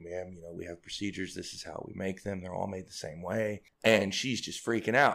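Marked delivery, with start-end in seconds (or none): 0.0-3.6 put-on calm teenager voice, lower and quieter. Retelling how a teenager answered a lady yelling at him, imitating a calm teenager. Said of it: "the teenager's being super calm and it's like".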